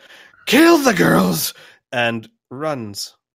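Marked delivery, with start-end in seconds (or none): 0.5-1.6 screaming slowly and loudly. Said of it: "uh, screams".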